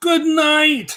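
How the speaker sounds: very high-pitched, loud cartoon voice. Saying good night to the others: sounding like Gru from Despicable Me. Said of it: "I sounded like the dude from, uh, Despicable Me".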